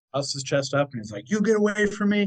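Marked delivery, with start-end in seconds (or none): 1.3-2.2 shrill, very high, raised yell. Telling a story of a man facing a mountain lion, retelling a man's shout. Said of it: "he just starts shouting at him".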